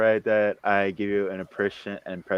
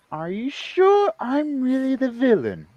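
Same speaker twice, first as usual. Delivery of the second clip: very high, slow, swooping sing-song character voice.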